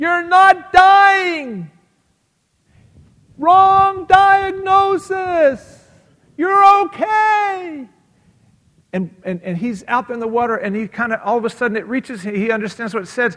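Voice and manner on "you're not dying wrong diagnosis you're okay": very shrill, very loud, slow, drawn-out screaming. Retelling a movie scene of a friend calling from shore: imitating Dom DeLuise screaming. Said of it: "is screaming on the shore".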